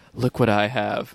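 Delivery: hushed, confiding murmur, said really quietly. Retelling a customer's secretive remark at the register: imitating someone speaking quietly. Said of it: "he said really quietly".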